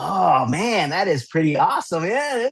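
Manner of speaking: mock, very slow, drawn-out feigned amazement and enthusiasm. Retelling pretending to see a picture book with a daughter: retelling feigned excitement. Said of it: "get all into it".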